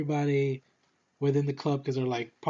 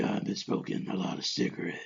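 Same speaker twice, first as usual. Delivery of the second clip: mocking, over-the-top, exaggerated whispered superhero voice; 6 semitones lower, 8 dB quieter than usual. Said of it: "You ain't gotta be like".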